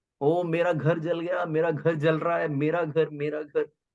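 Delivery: tearful, sobbing, crying voice. Retelling a story of a man whose house is burning: acting out crying. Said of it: "this person started crying".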